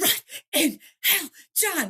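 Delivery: breathless, panting voice. Retelling a narrator's recording of a brothers' fight: imitating John Hartley huffing and puffing. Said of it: "he's huffing and puffing".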